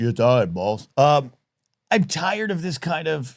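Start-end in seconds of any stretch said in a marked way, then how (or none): 0.0-0.9 voice of a huge giant. Repeating the line after saying it sounds like Andre the Giant. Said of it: "Sound like Andre the Giant".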